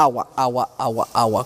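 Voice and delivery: very low, flat, mechanical robot monotone, word by word. Showing speech without inflection in a flat, mechanical robot voice. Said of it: "como robots".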